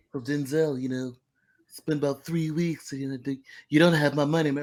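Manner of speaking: scolding, chastising tone in a cartoon-character voice. Doing a requested bit of Stewie chastising Denzel over money: Stewie Griffin voice. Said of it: "Do Stewie talking to Denzel".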